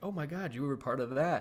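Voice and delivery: ordinary talk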